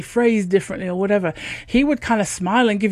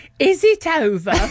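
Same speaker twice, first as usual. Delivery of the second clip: exaggerated, ridiculous northern English accent, pitched up; 7 semitones higher than usual. Retelling waking from brain surgery, she answers the voices: ridiculous northern accent. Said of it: "In this incredibly ridiculous northern accent".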